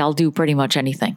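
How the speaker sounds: plain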